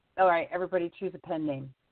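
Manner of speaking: ordinary delivery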